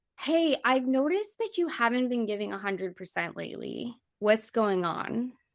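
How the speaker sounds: ordinary talk, nothing marked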